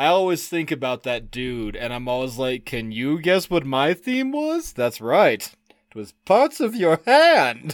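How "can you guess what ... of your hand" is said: sing-song comic delivery, pitch swinging all over. Retelling what the other says during game sessions: Emo Phillips impression. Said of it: "Emo Phillips".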